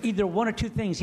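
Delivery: ordinary talk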